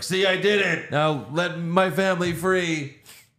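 high, hammy, overdone bad acting. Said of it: "their characters aren't good actors".

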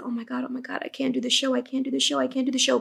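tearful, sobbing through the words. Retelling a panicked call to mom before a show: retelling own crying. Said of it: "Cry, cry, cry, cry".

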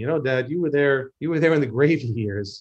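ordinary delivery

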